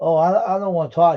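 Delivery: mean, really nasty, dismissive tone. Retelling a girl's reply on a returned phone call, imitating a nasty tone. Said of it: "really nasty to me".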